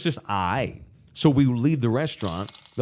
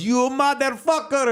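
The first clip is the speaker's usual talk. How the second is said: put-on, very high-pitched, thick Indian accent; 14 semitones higher than usual. Retelling what the manager of the real place said to him, in a put-on Indian accent. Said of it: "I'm only using the accent for context".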